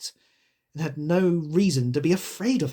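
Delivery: ordinary delivery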